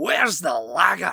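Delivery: put-on drunken-sounding Scottish accent. Retelling a man heard two train cabins down, in a Scots accent. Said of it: "like a Scots accent".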